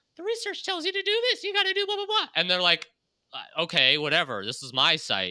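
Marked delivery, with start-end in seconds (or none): 0.2-2.3 very high, squeaky cartoon-mouse voice. Quoting someone telling a site owner what research says, in Mickey Mouse voice. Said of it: "I'm just going to keep on using this Mickey Mouse voice".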